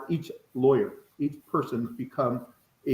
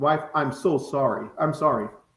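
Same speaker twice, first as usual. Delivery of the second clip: insincere, half-hearted tone. Showing how a husband apologizes to his wife: insincere apology. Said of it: "the tone of your voice is not sincere".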